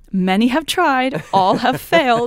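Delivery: playful, teasing, loud and slow joking delivery. Retelling a reply to him before a sound check, retelling a joking reply. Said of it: "kind of jokingly".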